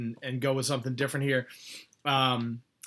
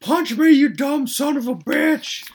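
put-on very high, very loud, shrill drunken Texan screaming; 14 semitones higher, 11 dB louder than usual. Recounting a wrestling storyline, imitating Terry Funk yelling like a drunk Texan. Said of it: "yelling and screaming like a fucking drunk Texan".

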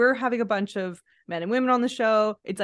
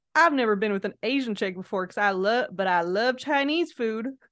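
put-on American Southern accent, laid on thick. Retelling what a dating show contestant said, imitating a Southern accent. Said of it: "with a Southern accent going".

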